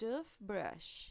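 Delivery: "toothbrush": "tooth" stressed, "brush" kept light. Teaching compound noun stress in English: stress on tooth in toothbrush. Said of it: "Tooth é a palavra que traz o stress".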